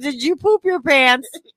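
put-on high accusing holler. Retelling how the father yelled at their daughter, imitating someone yelling. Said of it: "you're yelling at her like she did it".

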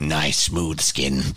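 put-on ghoul voice. Imagining how a character in the game would greet someone: Fallout ghoul voice. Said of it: "She's just like a ghoul and was like".

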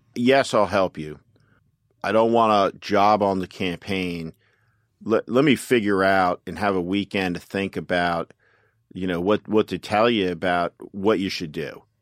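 ordinary talk

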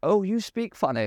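very high, put-on posh English toff accent. Acting out an imagined mascot who annoys the crowd: posh english accent. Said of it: "a really posh English guy".

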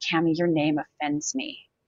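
put-on low, hushed voice. Retelling a man speaking right in the speaker's face, imitating his lowered voice. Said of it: "he lowers his voice and he goes".

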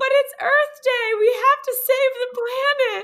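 put-on very high little-girl yell. Retelling what little girls shouted at the woman who pulled a boy back: imitating little girls yelling. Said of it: "the little girls start yelling".

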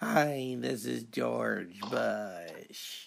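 drawn-out, sickly, under-the-weather voice. Playing a caller on a mock phone line: George Bush impression. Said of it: "George, you sound sick".

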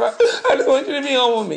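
woman's high, tearful, pleading voice breaking down. Describing how your woman may react to a stern talk, imitating a woman breaking down. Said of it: "she may even break down".

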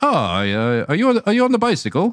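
put-on high, swooping, almost-Irish accent, pitched way up. Retelling what an old man outside the cafe asked: almost Irish accent. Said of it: "it was almost like an Irish accent".

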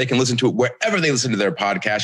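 plain

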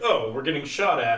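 ordinary talk

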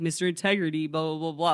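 put-on sarcastic taunting tone. Retelling how one man called out another, imitating someone being sarcastic. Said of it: "like being sarcastic".

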